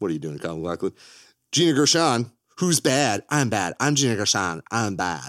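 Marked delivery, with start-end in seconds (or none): 3.3-5.3 slow, deliberate delivery, every word drawn out. Describing a film's cast, doing an impression: Gina Gershon impression. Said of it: "that's my impression of Gina Gershon".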